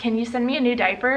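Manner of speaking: usual speaking voice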